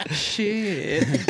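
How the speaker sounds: "shit" drawn out with a twang. Quoting Mom's own cussing, 'shit' drawn out with twang. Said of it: "Like she puts some twang on it".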